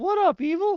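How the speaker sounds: very high, loud, squeaky cracking voice. Speaker greets listeners and the voice unexpectedly cracks: voice cracking. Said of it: "Why did my voice crack?".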